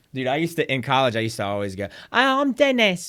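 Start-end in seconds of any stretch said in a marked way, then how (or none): 2.1-3.0 bad, fake, very high British accent. Retelling how strangers were greeted in college: terrible British accent. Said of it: "a terrible British accent".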